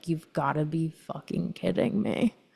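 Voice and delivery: imitated dry, deadpan delivery. Describing a character seen in oneself, imitating a dry delivery. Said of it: "she's just so dry and just like".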